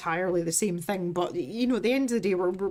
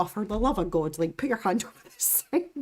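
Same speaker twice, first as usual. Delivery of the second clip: matter-of-fact, unfazed, exasperated tone. Retelling own past words to an injured employee: imitating own unfazed exasperation. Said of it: "not fazed at all".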